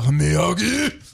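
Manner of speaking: high, creaky movie villain impression.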